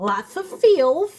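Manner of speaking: high, loud cartoon duck voice. Reader closing a reading for whoever chose the Louis Vuitton bag, Daffy Duck-like voice. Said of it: "I don't know why I get that voice at the end of readings".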